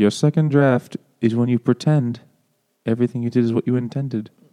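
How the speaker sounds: weird put-on lilt sounding vaguely British. Speaker quotes a man's writing advice in an Alan Rickman-like British lilt. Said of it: "like Alan Rickman kind of voice".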